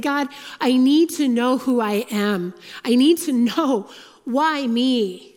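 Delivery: very slow, drawn-out, desperate pleading cry. Retelling a past prayer in a hard time: retelling crying out to God. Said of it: "So I'm crying out just like David".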